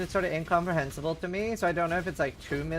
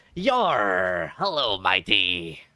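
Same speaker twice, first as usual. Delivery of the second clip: very low, booming put-on pirate voice, drawn-out "yar"; 9 semitones lower, 5 dB louder than usual. Teasing someone that their American accent sounds like a pirate, in a pirate voice. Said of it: "Your American accent sounds like a pirate".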